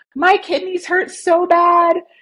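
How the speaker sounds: mock tearful, very high, slow, drawn-out crying plea. Retelling a phone call to Mom while sick: retelling own crying. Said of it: "just crying and being like".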